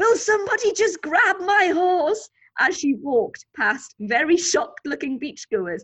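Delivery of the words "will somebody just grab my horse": loud, high, frantic shout, like a mad woman. Retelling chasing a loose horse on a beach: imitating shouting like a mad woman. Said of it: "shouting like a mad woman".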